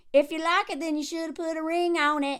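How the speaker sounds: put-on southern accent with a drawl. Quoting a man's line about a ring, in a Southern accent. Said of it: "that's my people who talk that way".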